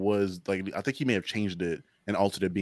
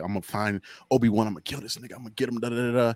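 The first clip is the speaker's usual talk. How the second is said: put-on angry villain voice, higher pitch; 4 semitones higher than usual. Retelling a scene where Darth Vader is pissed off: imitating Darth Vader angry. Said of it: "kinda all pissed off and angry".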